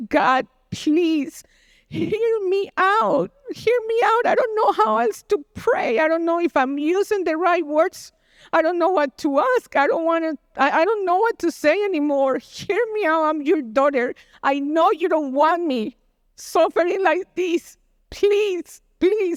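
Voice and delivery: high, put-on tearful sobbing, desperate and pleading. Retelling how she cried out to God in the car, reenacting a crying, screaming plea. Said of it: "I started crying, and I started screaming to God".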